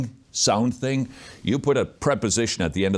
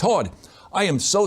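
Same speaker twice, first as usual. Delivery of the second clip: very high, slow, put-on Australian drawl; 11 semitones higher than usual. Retelling a phone call where Ray Comfort calls back: put-on Australian accent as Ray Comfort. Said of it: "this is my Australian accent".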